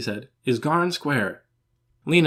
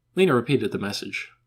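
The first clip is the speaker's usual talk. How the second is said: usual speaking voice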